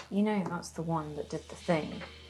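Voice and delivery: very soft, quiet, secretive half-whisper. A character speaks so that she won't hear, half-whispering. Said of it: "And I'll whisper this so that she doesn't hear".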